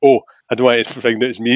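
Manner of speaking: usual speaking voice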